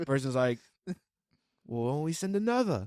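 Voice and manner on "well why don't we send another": terrible put-on British accent, very high pitched. Joking about the crash deaths, voicing the other person in a terrible British accent. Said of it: "my terrible British accent".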